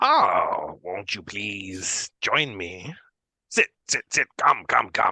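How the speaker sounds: put-on doting, grandmotherly dwarf woman voice. Narrator voicing a character who addresses the players, in a granny Dwergar woman voice. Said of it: "A granny Dwergar woman".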